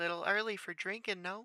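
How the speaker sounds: put-on very high, almost childlike little-kid voice. Voicing a barkeeper who speaks up to a customer: very high, almost childlike voice. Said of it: "in a very high, almost childlike voice".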